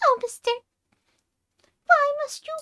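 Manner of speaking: very high, loud, cute squeaky voice. Showing that the voice works again after illness: Cream the Rabbit voice. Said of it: "I can do Cream again".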